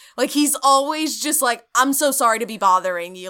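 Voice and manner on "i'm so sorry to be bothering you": mock apologetic tone, louder. Imitating the person from the show talking to a woman: imitating an apologetic tone. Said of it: "his posture is just incredibly apologetic".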